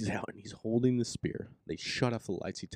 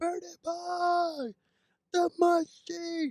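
put-on very high holler, boy stretched long; 5 dB louder than usual. Retelling a guy in the worst stadium seats: imitating someone yelling. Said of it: "He's yelling".

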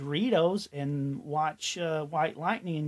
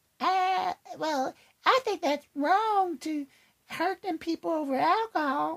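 put-on very high child's voice; 13 semitones higher than usual. Voicing a kid's reply to a parent's explanation: child voice. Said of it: "your child voice".

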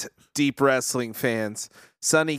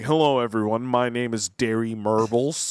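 dry, lower-pitched public radio host voice; 3 semitones lower than usual. Imitating a dry public radio host from a show: dry public radio voice as Derry Murbles. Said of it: "He's like".

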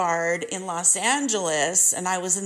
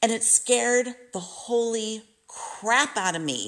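usual speaking voice

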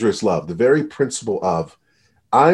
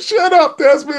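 very high-pitched, loud sobbing; 5 dB louder than usual. Retelling what crying people said back to him, imitating someone crying. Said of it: "And they're crying".

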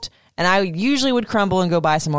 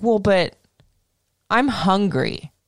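put-on kid voice, slow, pushy, demanding. Retelling what a kid said at a party, imitating a kid's demanding tone. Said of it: "The way he said it, too, was like, "Feed me now."".

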